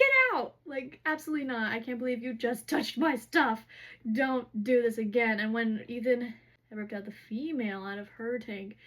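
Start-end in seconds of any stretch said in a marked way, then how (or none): 0.0-5.4 mock enraged, livid, furious yelling. Retelling the astronomer screaming at someone who touched his things: imitating a livid scream. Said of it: "The astronomer, livid, screaming at him".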